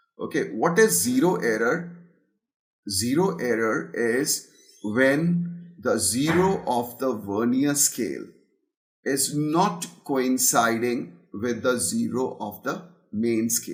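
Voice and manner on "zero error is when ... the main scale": very slow, deliberate, spelled-out delivery. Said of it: "I'm speaking very slowly".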